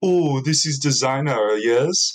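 poor, fake, put-on French accent. Retelling how a french lady at a club asked about the speaker's shirt: bad french accent. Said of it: "That's not a good French accent".

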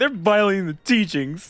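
put-on pouty voice. Quoting a game character's complaint about the teachings, in a mock-pouty delivery. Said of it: "He says it very pouty".

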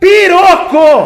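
full shouted outburst. Retelling a man slamming both hands on the table: imitating someone yelling. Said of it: "bateu as duas mãos na mesa e falou assim".

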